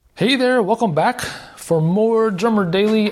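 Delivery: winded, breathless voice, pitched very high. Podcast host welcoming listeners back right after drum practice, out of breath. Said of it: "I am out of breath".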